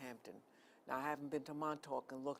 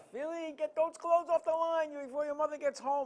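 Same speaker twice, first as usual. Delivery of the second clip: put-on loud yell in an Italian accent; 13 semitones higher, 10 dB louder than usual. Recalling his grandmother yelling at him about the washing, retelling her Italian-accent yell. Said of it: "she had an Italian accent".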